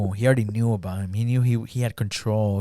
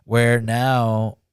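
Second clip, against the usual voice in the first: ordinary talk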